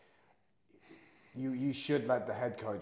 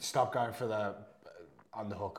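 plain

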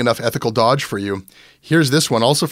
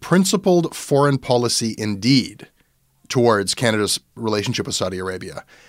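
plain

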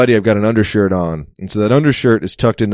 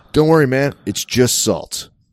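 put-on American accent; 4 semitones higher than usual. Retelling a man in Macedonia who speaks with an American accent, American accent. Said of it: "he says with an American accent".

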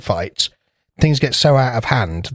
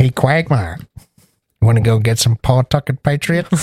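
put-on Boston accent, struggling and unsteady. Asked to do your best despite saying you can't, address Quagmire in a bad Peter Griffin impression. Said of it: "because I struggle with a Boston accent".

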